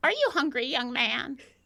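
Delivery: put-on elderly woman's voice. Voicing the old woman asking a player if he is hungry: voicing an old woman. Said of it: "Betty looks over at you, Pants, and says".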